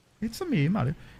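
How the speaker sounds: put-on Italian accent. Asking how to sniff in an accent, then: Mario voice in Italian accent. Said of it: "in an Italian Swedish accent".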